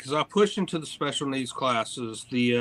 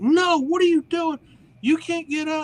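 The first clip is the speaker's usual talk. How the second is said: very high, shrill, high-pitched scream; 5 dB louder than usual. Retelling how the interpreter screamed at the kids: imitating someone screaming. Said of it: "he starts screaming at the kids".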